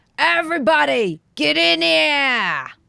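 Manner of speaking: very loud, very high, shrill snarling shout, held long. Game master voicing a character snarling at the players: snarling. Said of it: "He snarls at you and says".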